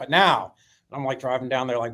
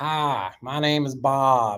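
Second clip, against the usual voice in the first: put-on thick, strong Florida old-timer accent. Retelling a man introducing himself at a meeting, imitating Bob's deep accent. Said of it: "he had this deep accent".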